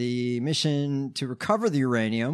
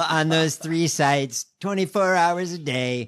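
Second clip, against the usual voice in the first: put-on blustery politician voice, higher pitched; 3 semitones higher, 3 dB louder than usual. Doing an impression of Trump talking about cameras on sites: Trump impression. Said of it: "these Trump impersonations".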